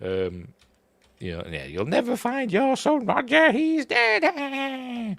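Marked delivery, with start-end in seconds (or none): 1.5-5.2 very high, slow, swooping, squeaky sing-song. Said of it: "she's saying in a squeaky voice".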